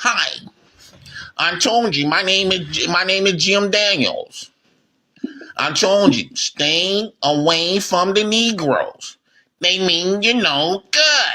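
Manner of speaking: slow, put-on male work voice. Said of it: "You have to change your voice".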